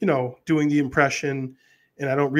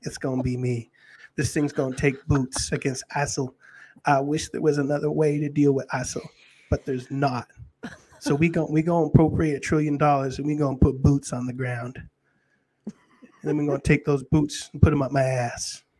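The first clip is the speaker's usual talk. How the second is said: put-on Southern US senator voice. Answering a question on a senator's view: Lindsey Graham impression. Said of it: "the Lindsey Graham impression, but I'll give it a whirl".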